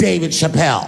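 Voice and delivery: sudden calling out. Retelling a woman calling out in a parking lot: imitating a woman calling his name. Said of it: "I hear a voice go, ... Just like that".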